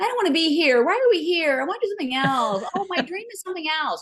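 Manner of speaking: very high complaining voice. Describing the complaining inner voice they call lizard brain: imitating complaining inner voice. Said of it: "you have this monkey voice that goes".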